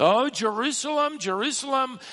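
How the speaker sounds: high, loud anguished sob. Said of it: "that's a sob of anguish".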